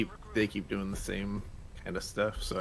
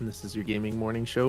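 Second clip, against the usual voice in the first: usual speaking voice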